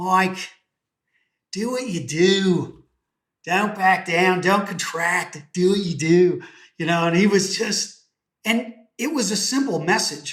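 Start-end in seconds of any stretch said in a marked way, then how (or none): 0.0-6.4 put-on Australian accent, drawn-out "do". Retelling a friend's advice given over a beer, in an australian accent. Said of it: "he said in his Australian accent".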